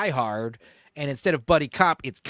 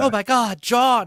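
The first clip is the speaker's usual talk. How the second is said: high, loud, drawn-out terrified and aroused voice; 8 semitones higher, 5 dB louder than usual. Retelling how the wife reacts on seeing him hurt: imitating her terrified and turned on. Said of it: "terrified and turned on and all this shit all at once".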